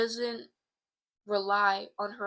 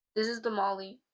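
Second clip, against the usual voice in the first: normal talking voice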